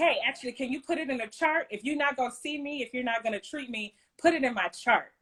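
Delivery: ordinary delivery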